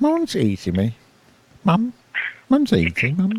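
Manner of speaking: fake British accent, very high and swooping. Hosts planning a program agree to say a line Britishly; speaker tries a put-on British accent. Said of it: "we have to say it Britishly".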